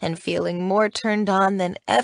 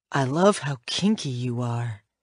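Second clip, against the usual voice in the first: whisper with a smile in it; 7 semitones lower than usual. In a story, a man whispers in the narrator's ear: smiling whisper. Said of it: "he whispers in my ear, and there's a smile in his voice".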